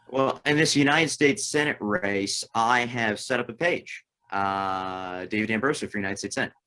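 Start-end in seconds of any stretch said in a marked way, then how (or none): 5.2-6.4 rattled off, talking too fast. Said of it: "you talk too fast".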